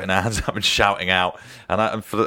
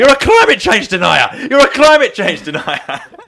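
incensed, furious roar, very loud and very high; 14 semitones higher, 11 dB louder than usual. Recalling shouting at a man on telly, retelling a bellow. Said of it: "I was bellowing".

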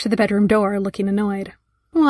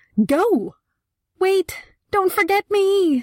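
very high, very slow, drawn-out shrieking cry; 10 semitones higher than usual. Narrator reads a painting's cry as paintings are evacuated; shrieking. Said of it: "shrieked some poor painting".

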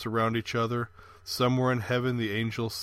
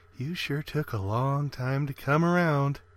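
whispering; 3 semitones higher than usual. A woman runs her hand through a man's hair and speaks again, whispered. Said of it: "whispered again".

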